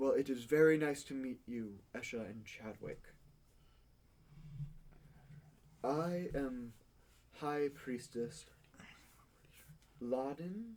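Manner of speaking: serene, lyrical, very hushed, barely above whisper. Meeting the other players' characters, speaking as High Priestess Laden, calm and poetic. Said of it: "she speaks very poetically and calmly".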